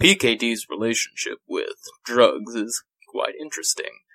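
put-on on-air radio announcer voice. Speaker discussing Dick's attitude toward drugs switches into radio voice. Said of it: "this is my radio voice".

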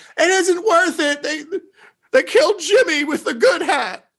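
very high, shrill yelling. Voicing a fleeing character yelling as she runs: NPC yelling. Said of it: "You hear her just yelling".

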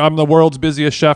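ordinary delivery

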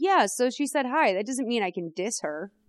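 normal talking voice

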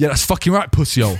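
mock-aggressive, hostile put-on man's voice. Recounting what a man said to them while staring, retelling an aggressive insult. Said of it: "aggressive man insulting speaker, continues staring".

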